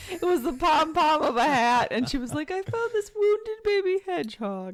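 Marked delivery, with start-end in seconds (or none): 2.5-4.7 put-on high elderly British lady accent. Retelling what a lady said about a hedgehog: imitating old British lady accent. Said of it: "old British lady's accent is pretty good".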